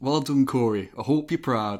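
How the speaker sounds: imitated Geordie accent. Reading out a wrestler's promo in a Geordie accent: bad Geordie accent doing Neville. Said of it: "That sounds more Yorkshire than fucking Geordie".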